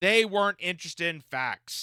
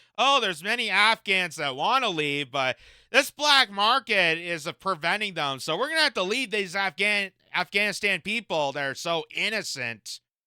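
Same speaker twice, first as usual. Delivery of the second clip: normal talking voice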